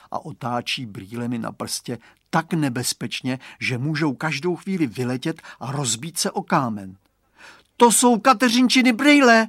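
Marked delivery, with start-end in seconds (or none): 7.7-9.4 very high, loud, sudden crying out. Seeing a youth twirl someone's glasses on his finger, a boy cries out. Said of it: "vykřikne Radovan".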